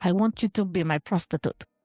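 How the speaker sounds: fake thick Persian accent. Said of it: "That's very Russian".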